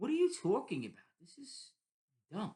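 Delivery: play-acted incredulous, disbelieving, swooping brush-off. Retelling someone's reply to a chess question: imitating an incredulous tone. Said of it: "the tone of his voice".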